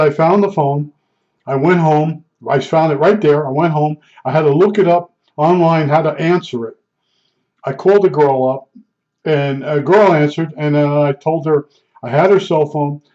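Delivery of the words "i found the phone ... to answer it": normal talking voice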